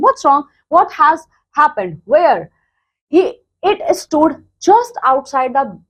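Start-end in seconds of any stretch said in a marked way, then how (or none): none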